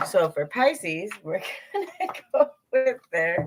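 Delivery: giggling and laughing through the words. Reading for pisces after a joking comment, giggling while talking. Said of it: "I had to have a little giggle at that".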